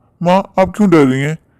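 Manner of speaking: plain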